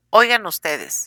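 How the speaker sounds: usual speaking voice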